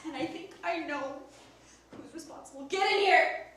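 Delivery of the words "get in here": loud, acted, shouted yell. Calling the suspect in during an acted skit: acted yelling. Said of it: "Why do you keep yelling at me?".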